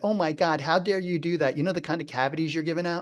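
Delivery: ordinary delivery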